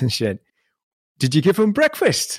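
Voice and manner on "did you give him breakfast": put-on very high voice, Northumberland northeast English accent. Retelling what a cleaning lady asked about the dog: Northumberland accent. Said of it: "she had the funniest accent".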